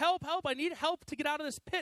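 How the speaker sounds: high-pitched, loud calling yell. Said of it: "his friend yells up".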